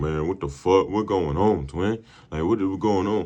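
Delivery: mock stressed, panicked, confused outcry. Retelling a scene where passengers panic: imitating stressed passengers. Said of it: "everybody else is stressing".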